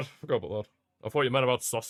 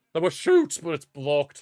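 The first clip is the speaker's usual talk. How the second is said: voice breaking with a crack; 3 semitones higher, 3 dB louder than usual. Commentating on a football match, voice cracking. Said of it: "Apologies for the voice crack".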